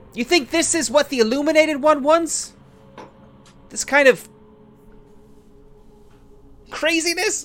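shrill, very high, loud yelling. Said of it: "as you start shouting".

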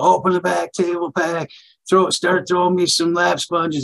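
high, urgent yelling. Retelling an emergency surgery, own orders to staff: imitating own past yelling. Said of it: "I'm yelling at people".

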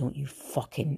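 put-on soft, menacing whisper in Glasgow accent. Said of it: "I whispered in her ear".

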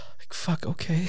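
hushed, breathy, terrified whisper. Retelling their reaction to being told to do all the research: acting out terror. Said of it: "You sounded terrified".

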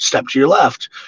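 normal talking voice

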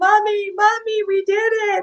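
mock very high yelling through tears. Gold medalist retells yelling up to mom in the stands, acting out yelling while crying. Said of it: "i'm crying and i'm yelling at my mom".

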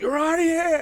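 very high, loud outburst. Retelling someone being thrown out, the speaker quotes the ejection in an Odo voice. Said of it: "he does it in that Odo voice".

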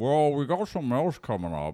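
high, slurred voice with heavy slurring throughout. Retelling what a producer said, in an impression of him. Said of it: "this is my impression of".

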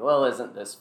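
mocking, sarcastic tone. Speaking in character during a fight: sarcastic. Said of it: "I'll just sarcastically say".

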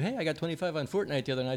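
quiet, fast bragging voice.

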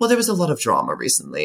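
put-on sing-song British accent. Imitating how mom answers the question about work after a bad day, in a put-on British accent. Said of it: "she'll use the British accent".

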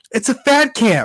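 put-on very high, indignant, mad voice, drawn out. Retelling a story, acting out how he got all mad: acting out him getting mad. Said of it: "he gets all mad and he's like".

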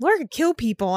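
ordinary talk

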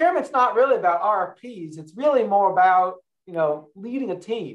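put-on Arkansas accent. Retelling what a procurement officer said at lunch: imitating Jane Benton's accent. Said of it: "she said in this great accent".

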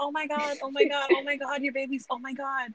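fairy-tale princess voice. Showing the voice used at work: Disney princess voice. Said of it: "I can give you Disney princess".

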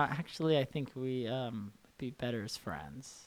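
soft, quiet, disappointed tone.

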